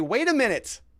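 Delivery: mock outrage, high and loud.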